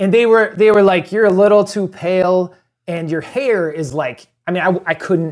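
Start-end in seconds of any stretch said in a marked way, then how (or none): none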